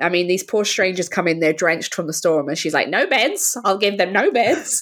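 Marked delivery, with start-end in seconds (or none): 2.9-4.8 mock bone-dry, unbothered, dead straight delivery. Quoting a film character refusing beds to drenched strangers: imitating Rebecca's deadpan delivery. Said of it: "she's so deadpan".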